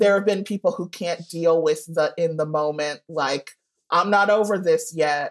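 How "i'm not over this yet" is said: ordinary talk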